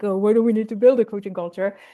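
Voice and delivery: mock skeptical executive voice, doubtful tone. Interviewer mimicking a skeptical executive for the guest, mock skeptical executive voice. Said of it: "don't know why they have that voice".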